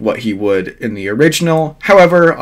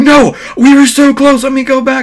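shrill, very high, loud, acted-out screaming; 14 semitones higher, 5 dB louder than usual. Retelling a scene where Naruto is pulled away from his mom: imitating Naruto screaming. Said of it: "screaming at this point".

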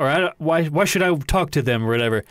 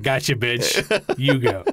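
imitated smugness, lower, slower; 2 semitones lower than usual. Retelling a man taunting a woman, imitating his smug taunt. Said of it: "he just has this smugness on his face".

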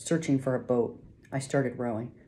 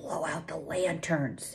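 low, murmured voice; 3 semitones higher, 7 dB quieter than usual. In a rowing boat in the dark, Sam gives an order in a low voice. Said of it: "Sam said in a low voice".

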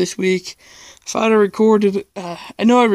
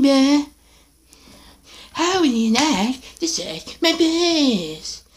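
high bratty cartoon kid voice, "piss" stretched; 6 semitones higher than usual. Speaker asks viewers whether to hear Yoda or Cartman, then does: Cartman voice. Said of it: "You guys want to hear Yoda or Cartman?".

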